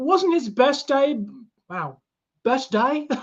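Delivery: Australian accent slipping in. Speaker recaps the starting quarterback's practice day: accidental australian accent. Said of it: "I don't know where the Australian accent came from there".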